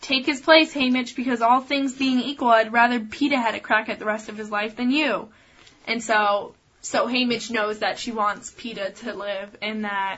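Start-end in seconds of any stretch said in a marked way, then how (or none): none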